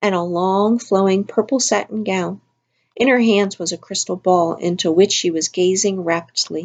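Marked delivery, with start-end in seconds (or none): none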